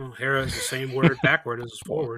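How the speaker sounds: half-mumbled, muttered voice. Imagining a third baseman idle all game, muttering to himself. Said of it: "just muttering to himself".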